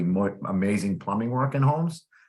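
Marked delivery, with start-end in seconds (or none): none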